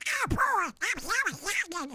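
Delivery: pitch rising way up and swooping. Comparing how a cartoon voice changed since childhood, the speaker does the higher Donald Duck voice. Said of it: "But now it's higher".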